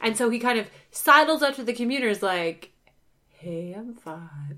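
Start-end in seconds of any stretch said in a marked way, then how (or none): 3.4-4.6 very soft, low, hushed, seductive sexy voice. Retelling how a scientist sidles up to a computer: imitating a very sexy voice. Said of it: "He uses, like, a very sexy voice".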